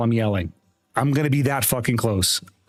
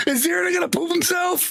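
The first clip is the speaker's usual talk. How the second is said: high-pitched mock voice. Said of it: "The amount of people would be like".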